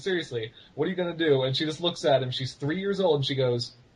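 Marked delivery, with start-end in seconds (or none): 0.0-1.4 mock taunting speech with laughter mixed in. Retelling a man laughing as he taunts a three-year-old: imitating someone laughing while talking. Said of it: "he just keeps like laughing, going".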